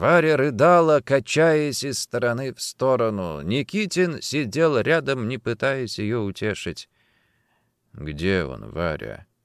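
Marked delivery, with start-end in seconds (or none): 7.9-9.2 very low, soft, quiet voice. Nikitin sits beside sobbing Varya and asks her quietly. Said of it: "тихо спросил он".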